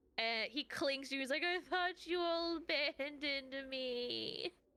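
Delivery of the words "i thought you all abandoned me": very slow, tearful sobbing with the word me stretched. Voicing a character who has been sobbing, clinging to a friend: sobbing, tearful character. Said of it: "just sobbing".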